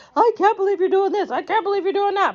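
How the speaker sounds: mocking, high, whiny voice.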